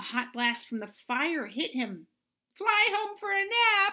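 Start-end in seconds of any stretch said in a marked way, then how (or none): 2.5-3.9 loud, very high squeal. Reading a children's story aloud, the eagle is hit by a hot blast, squealing. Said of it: "he squealed".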